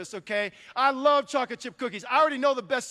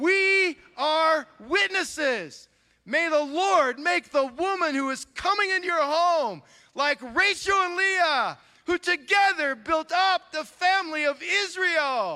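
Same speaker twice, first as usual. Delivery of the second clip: grand, thrilled, spectacular-sounding delivery; 4 semitones higher than usual. Reading a play aloud with the group, like something spectacular just happened. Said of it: "read it like something spectacular just happened".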